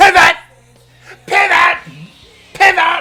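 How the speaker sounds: put-on frantic yelling. Doing a Ross from Friends bit about a custom tab: yelling like Ross from Friends. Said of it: "you turn into Ross from Friends".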